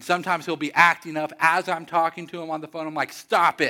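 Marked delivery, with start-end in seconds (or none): 3.1-3.7 fatherly voice, louder. Retelling telling a son who acts up on the phone to stop: dad voice. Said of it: "I bring out my dad voice".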